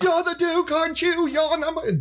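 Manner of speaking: very high, unhinged, manic screaming breakdown. Retelling a man screaming at the Duke as if breaking down: mock-screaming breakdown. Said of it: "as he's screaming as [name] out of his mind".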